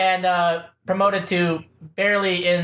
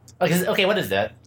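ordinary delivery

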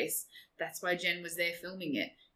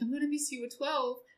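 tearful, sad, emotional, pitched up; 7 semitones higher than usual. Retelling a movie scene where a sister gets sad: imitating someone sad and emotional. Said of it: "gets all emotional".

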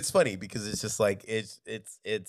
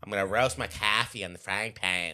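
put-on Boston accent. Joking about how pan sounds, put-on Boston accent. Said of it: "Please never talk like that again".

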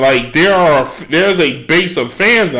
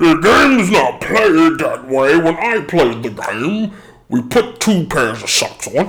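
put-on old guy voice, old-timer's way of talking. Imitating some old guy on how the game should be played: imitating an old guy. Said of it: "And then you got some old guy".

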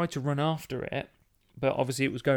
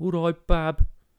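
high-pitched, very loud Dudley accent; 5 semitones higher, 9 dB louder than usual. Explaining to listeners in other countries how Dudley people talk, Dudley accent. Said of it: "And they say bab a lot".

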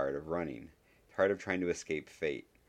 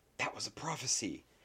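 sharp, pitched-up hissed delivery; 6 semitones higher, 4 dB quieter than usual. Someone at the table speaks as heads turn toward Harry Potter; hissed. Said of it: "someone at the table hissed".

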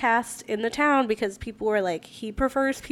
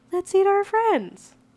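put-on tiny child's voice, very high, like a little girl; 9 semitones higher, 4 dB louder than usual. Speaker voices a little girl in a story of survivors, little girl's voice. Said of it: "a little voice is like".

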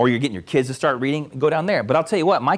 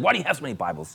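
mock judgmental, rude, jabbing tone; 4 dB quieter than usual. Retelling what Paul asked: imitating Paul, judgmental and rude. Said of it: "He said it very judgmentally and rudely".

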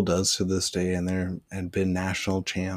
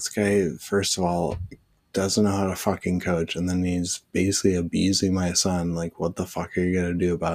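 normal talking voice

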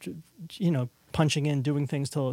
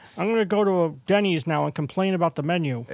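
put-on loud, cranky, complaining old man voice; 2 semitones higher, 5 dB louder than usual. Joking about music production, acting like the cranky old guy. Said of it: "act like the cranky old guy".

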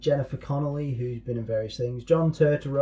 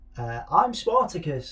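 said in a high pitch; 3 semitones higher than usual. Speaker quotes the Spartacus film line, doing it in a high-pitched voice. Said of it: "I did it in all high-pitched voices".

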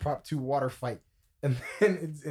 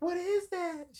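put-on very high-pitched little-kid voice. Retelling asking about a mystery box: imitating own high child voice. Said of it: "that first voice was crazy".

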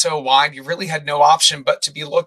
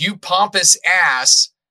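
sudden put-on screamed outcry, tossed out like a heckle; 3 semitones higher than usual. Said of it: "Some guy just screams".

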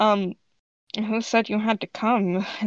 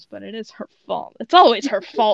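loud, grumbling mumble; 5 dB louder than usual. Voicing a character in a group role-play, answering another character by mumbling. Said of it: "and then mumbles".

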